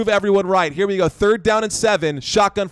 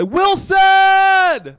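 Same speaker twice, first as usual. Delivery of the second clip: very high, all-out scream; 11 semitones higher, 4 dB louder than usual. Calling a football play, screaming the name like in Cast Away. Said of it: "start screaming like this is Castaway".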